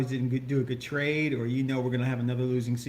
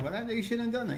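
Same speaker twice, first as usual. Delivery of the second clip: offhand, dismissive, pitched-up tone; 9 semitones higher, 3 dB quieter than usual. Repeating someone's earlier remark, imitating a dismissive tone. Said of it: "you kind of said it in a very like dismissive tone".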